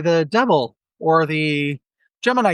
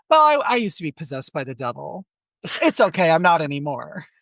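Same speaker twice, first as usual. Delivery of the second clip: put-on dumb-sounding, swoopy, sing-song Valley Girl voice. Replying to people surprised by their age, using Linda Blair's Valley Girl delivery. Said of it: "I just say it kind of stupid like that because she sounds like a Valley Girl".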